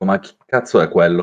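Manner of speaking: low, quiet mutter under the breath. Explaining how he reacts when chasing someone, muttering to himself quietly. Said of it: "come se parlassi a me stesso a bassa voce".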